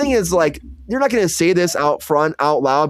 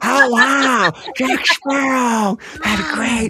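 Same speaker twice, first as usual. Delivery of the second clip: high, slow, drawling voice, words stretched out; 6 semitones higher than usual. Imagining a casting choice as a pirate mother, doing a Jennifer Coolidge voice. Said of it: "I want that voice".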